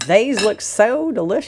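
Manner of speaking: put-on southern American accent. Sharing food, echoing another person's remark while imitating a southern accent. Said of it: "I like your southern accent there".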